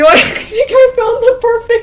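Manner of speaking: loud, high laughing.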